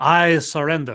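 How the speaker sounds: put-on French accent. Answering a request to give a little french accent: french accent. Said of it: "can you give us a little French accent there".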